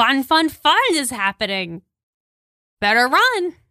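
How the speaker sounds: cackling laugh while speaking. Voicing a cackling character who answers a player's question: cackling. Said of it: "cackles a little bit, and says".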